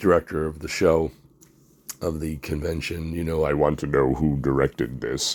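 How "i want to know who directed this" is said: wonderful deep, low-pitched voice. Retelling what Shang Tsung asked the convention director: imitating Shang Tsung's wonderful voice. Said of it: "he said in this wonderful voice".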